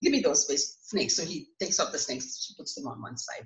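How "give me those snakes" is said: ordinary talk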